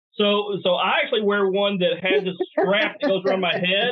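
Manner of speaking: mock-enthusiastic sarcastic tone. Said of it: "you're being a little sarcastic".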